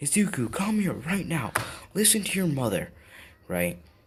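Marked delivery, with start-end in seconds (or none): 0.0-2.9 high, angry, screaming scolding yell. Telling a story about a public scene, retelling a mother's yell. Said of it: "She's yelling".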